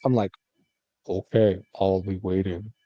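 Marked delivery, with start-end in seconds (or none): 1.1-2.7 slow, eerie, creepy disguised put-on voice. Retelling answering the phone to mom in a changed voice. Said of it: "you would change your voice?".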